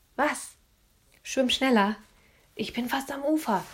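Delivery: whispering. Swimming ahead of Philipp, Anne answers him, whispered. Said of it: "flüsterte sie".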